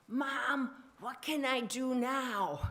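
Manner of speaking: put-on bossy, high, loud, demanding five-year-old voice. Recalling her earliest memory at the kitchen counter, the speaker imitates a demanding little five-year-old. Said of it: "in a demanding little five-year-old voice".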